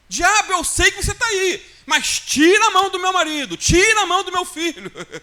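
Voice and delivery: forceful, loud, commanding shout. Retelling how the sister in a film orders the devil away: imitating someone shouting. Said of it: "e ela começa a gritar".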